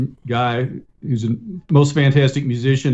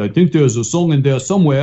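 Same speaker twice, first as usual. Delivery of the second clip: put-on German accent. Quoting the collaborator who gets your co-written lyrics, imitating Mariam's German accent. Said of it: "he says in his German accent".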